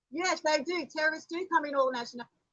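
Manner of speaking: worked-up, forceful, heated and emphatic. Arguing with another speaker about being called a terrorist: yelling. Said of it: "why are you yelling?".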